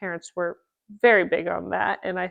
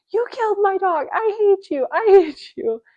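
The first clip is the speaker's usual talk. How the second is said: put-on, very high, shrill, shrieking scream; 13 semitones higher, 4 dB louder than usual. Recalling dad sitting them down after school about the dog, retelling screaming at him. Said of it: "I will never forget screaming at him like".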